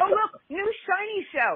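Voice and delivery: high, put-on excited gushing. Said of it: "I was like".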